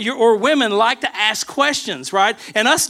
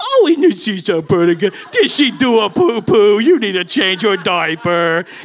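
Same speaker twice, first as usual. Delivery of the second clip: put-on weird, swooping, sing-song baby talk; 3 semitones lower, 3 dB louder than usual. Speaker imitating how people talk to their dog, in a weird baby-talk voice. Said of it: "use that weird voice".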